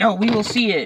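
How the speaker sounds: furious, angry shout, loud and high. Retelling a scene from a play where the lord yells: imitating someone angrily yelling. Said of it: "he gets mad at me".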